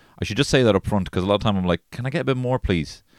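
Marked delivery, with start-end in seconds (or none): 1.9-3.0 put-on sorry-sounding, small, pitched-up apologetic tone. Retelling asking for more meat at a deli: imitating apologetic asking. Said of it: "I'm apologizing".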